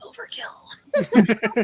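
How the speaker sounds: stage whisper pushed through the teeth. Acting in character after being stabbed: whispering through teeth very quietly. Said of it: "I whisper in my teeth very quietly".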